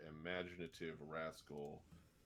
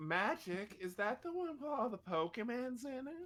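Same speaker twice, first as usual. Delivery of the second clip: very high, raised, put-on girly voice; 7 dB louder than usual. Joking about not knowing Magic, putting on a girl voice. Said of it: "I'll do a girl voice".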